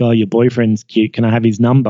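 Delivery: plain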